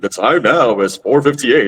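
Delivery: deep radio announcer voice. Showing a joke bit of announcing the time: radio announcer voice. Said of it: "be like a radio announcer".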